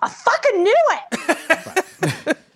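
very high, very slow, drawn-out shriek. Recalling the long-awaited moment in the movie, retelling a scream. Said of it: "I actually screamed".

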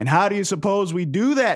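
gruff, high, surly yelled shout. Voicing a man at the back of a crowd heckling the speaker: surly man yelling. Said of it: "A surly man from the back yells at her".

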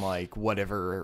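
ordinary talk, nothing marked

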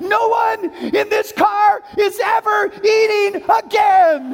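put-on very slow, high, drawn-out fed-up yell. Retelling losing it while driving, re-enacting yelling at everyone in the car. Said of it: "and I start yelling".

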